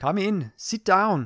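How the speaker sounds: bad, clumsy Indian accent, slow and high. Playing out being called into the boss's office today, do a bad Indian accent as Shilpa.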